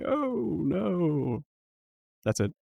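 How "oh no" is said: faint, high, far-off voice, oh no drawn out. Game master voices a shadowy form speaking in the players' heads: very faint voice. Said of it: "a very faint voice in your head saying".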